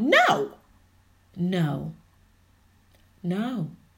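firm, insistent, emphatic stress on each "no". Speaker teaching listeners to use their voice: emphatic no. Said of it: "You just emphasizing that word no".

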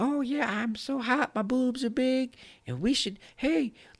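put-on flirty woman's voice. Speaker retells fooling a trucker by posing as Candy Cane, lady voice. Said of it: "they pretend to be a lady".

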